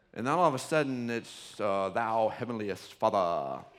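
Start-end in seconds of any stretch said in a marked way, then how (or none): 1.6-3.6 mock prayer-like voice, lisping, much lower, slower. Describing how people's voices change when they start praying at church: imitating a lisping prayer voice. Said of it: "their voice changes".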